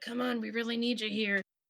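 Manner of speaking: whispered, pleading tone. Grasping the soaked top of a rug and speaking to it: whispering. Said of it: "you kind of like whisper like".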